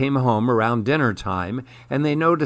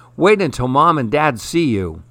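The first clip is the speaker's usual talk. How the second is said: usual speaking voice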